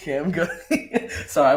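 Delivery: breaking into laughter. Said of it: "I'm laughing when just Cam added me".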